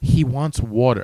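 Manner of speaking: disbelieving, can-you-believe-it incredulous tone. Retelling what the nurse told the doctor: imitating nurse's incredulous tone. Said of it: "She says it like he wants water".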